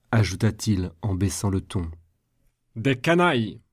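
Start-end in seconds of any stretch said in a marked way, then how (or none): 2.7-3.5 forceful, emphatic, cried-out outburst. A man, after lowering his tone, suddenly cries out in a thundering voice. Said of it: "s'écria-t-il d'une voix tonnante".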